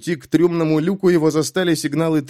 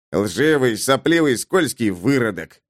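ordinary delivery, nothing marked

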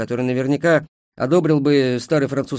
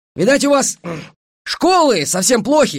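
contemptuous, scornful sneer pitched very high; 10 semitones higher, 4 dB louder than usual. One man answers another's claim about the bridge, contemptuous. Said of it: "презрительно сказал Погаса".

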